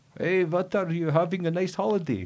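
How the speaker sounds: very high, clumsy, bad fake Russian accent. Retelling a woman greeting him on a minibus journey, bad Russian accent. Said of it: "In a bad Russian accent".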